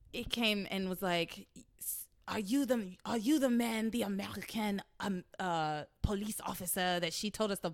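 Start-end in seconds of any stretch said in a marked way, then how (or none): 2.2-7.7 imitated French accent. Retelling what a hotel worker asked on arrival, imitating a French accent. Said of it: "I can only do the French accent for so long".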